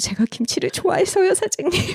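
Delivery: very high, tiny, shrinking, timid, sheepish voice. Retelling an excuse given to the restaurant owner after being caught; retelling a small, shrinking voice. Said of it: "기어 들어가는 목소리로".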